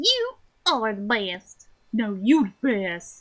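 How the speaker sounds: bad, terrible, fake Southern accent. Playing along after slipping into the accent again: terrible southern accent. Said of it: "I'm just stuck giving them a terrible southern accent".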